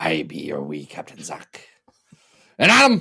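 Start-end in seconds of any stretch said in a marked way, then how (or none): 0.0-1.7 very low, deep, hushed put-on pirate voice. Co-host introducing himself on an X-Men podcast, in a pirate voice. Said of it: "how long will we be doing these pirate voices today?".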